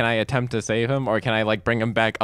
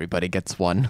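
soft half-whisper with no voice; 4 semitones lower than usual. After dropping him on the fourth floor, the character half-whispers. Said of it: "I whisper".

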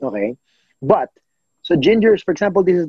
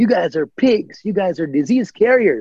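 mild mock shout, the yell only hinted at; 4 semitones higher than usual. Retelling insults a man on the trail shouted: imitating a man shouting. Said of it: "he shouts back".

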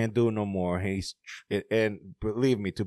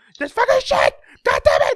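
very high, very loud, shrill, full-throated raging scream; 12 dB louder than usual. Retelling how a man snapped at every little thing, imitating his screaming. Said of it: "He started screaming like".

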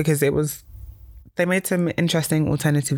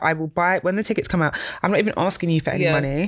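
plain

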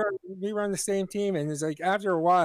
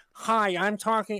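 bad fake American accent; 2 semitones higher than usual. Mocking how a british person sounds doing an american accent, bad american accent impression. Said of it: "you sound like this".

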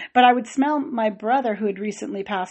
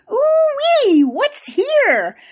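put-on shrill, high, sing-song, swooping old farmer voice; 6 dB louder than usual. Recalling being woken in bed, the speaker imitates a voice like an old farmer's. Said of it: "like this old, I don't know, farmer's voice or something going".

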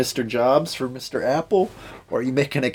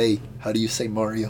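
ordinary delivery

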